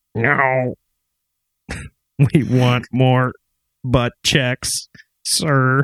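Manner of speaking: space alien character voice. Acting out aliens visiting the Oval Office: gray alien impression. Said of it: "That's my gray alien impression".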